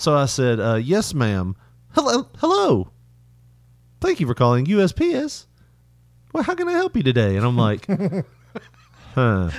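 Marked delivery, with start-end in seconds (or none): 1.9-7.4 very high-pitched, glitching, malfunctioning automated robotic voice. Retelling a phone call answered by a robot: glitching robotic voice. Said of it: "She started glitching".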